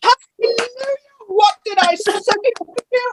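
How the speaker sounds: very high, full-voiced, top-of-the-lungs shout. Retelling how the counselor came running after the speech: imitating someone shouting. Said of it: "at the top of her voice".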